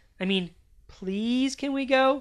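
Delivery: put-on high little-kid voice, almost five years old. A child narrator asking again, politely this time, to leave, almost 5-year-old voice. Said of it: "in my best, almost 5-year-old voice".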